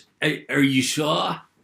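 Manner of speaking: bad put-on American accent. Acting out a conversation, the speaker puts on a really bad american accent. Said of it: "That's my really bad American accent".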